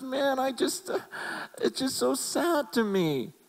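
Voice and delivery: put-on tearful weeping, very high and slow. Retelling a friend's tearful words on the phone: imitating someone crying. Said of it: "He's crying and going".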